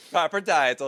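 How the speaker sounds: Italian accent, laid on thick. Repeating a phrase after being asked what was said: Italian-sounding accent. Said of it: "You sound Italian".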